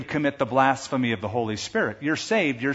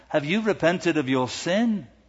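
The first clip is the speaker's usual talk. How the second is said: put-on English accent; 3 semitones higher than usual. Retelling a pastor's question to a woman in the prayer room, in an english accent. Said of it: "said in his English accent".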